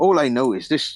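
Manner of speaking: put-on, faltering West Country accent. Voicing a game character explaining strange magic: attempted West Country accent. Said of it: "I'm gonna stop with the accent".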